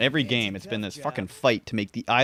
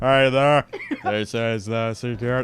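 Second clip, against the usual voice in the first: bad put-on announcer voice, louder; 5 dB louder than usual. Voicing a park security console, then calling it a terrible impression: terrible Patrick Warburton impression. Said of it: "That's my terrible Patrick Warburton".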